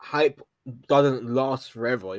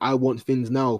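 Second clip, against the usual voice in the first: usual speaking voice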